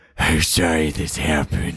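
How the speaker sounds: very low, slow, deliberately poor drawl. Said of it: "I'm doing a shit job of it".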